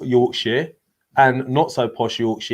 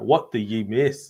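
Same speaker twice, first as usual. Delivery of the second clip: slow, put-on Scottish accent, "ye" for "you"; 3 semitones lower, 4 dB quieter than usual. Reading out a viewer's question, trying to copy his accent: imitating Seamus's accent. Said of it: "I'm trying to say it in his accent".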